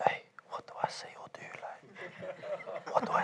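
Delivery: very quiet, slow, hushed whisper. Speaker recalls being in the van before the pilot, retelling a whisper to Zoo. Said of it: "I remember whispering to Zoo like".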